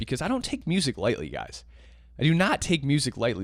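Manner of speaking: ordinary talk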